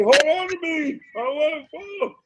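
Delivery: mock frantic, freaked-out panicky outburst, very high pitched. Retelling how a friend reacted to going too fast; imitating someone freaking out. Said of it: "And he was like freaking out".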